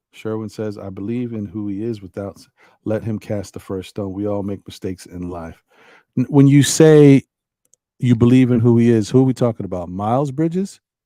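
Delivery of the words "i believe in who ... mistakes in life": ordinary talk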